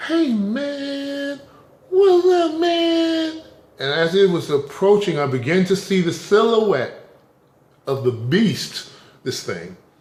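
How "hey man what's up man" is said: very high-pitched, slow, drawn-out friendly voice. Retelling greeting an approaching beast with a smile: high-pitched voice. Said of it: "with a high pitched voice because that's what they like".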